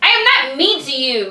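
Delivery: heated, indignant, hard-pushing defensive tone. Accused of being mean, the speaker protests: defensive yelling. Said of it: "you're yelling at me right now".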